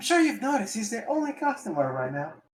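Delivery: timid, mousy voice. Voicing the hostess character in a game: mousy voice. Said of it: "you gave her, like, a mousy voice".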